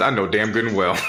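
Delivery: ordinary delivery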